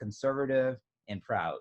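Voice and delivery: ordinary talk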